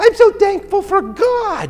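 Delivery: put-on loud, very high, tiny little-girl preschooler voice. Recalling a little girl answering what she's thankful for, in a 4-year-old little voice. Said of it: "in this 4-year-old little voice".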